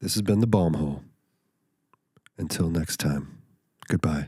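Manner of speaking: loud radio station announcer voice. Giving the podcast sign-off after being asked: radio announcer voice. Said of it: "Radio voice".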